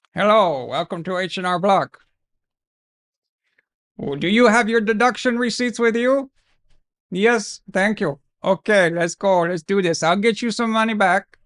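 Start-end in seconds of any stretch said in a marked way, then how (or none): 0.1-6.3 put-on voice with a mixed Arabic and Indian accent.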